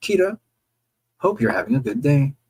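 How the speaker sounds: normal talking voice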